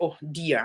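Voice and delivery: sarcastic, mocking tone. Showing how the word dear sounds to Ukrainians: sarcastic "oh dear". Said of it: "dear here sounds more, uh, like a sarcasm".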